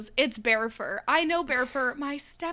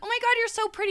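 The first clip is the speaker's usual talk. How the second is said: very high-pitched, up-in-the-head voice; 10 semitones higher than usual. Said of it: "you can't go into like your high voice".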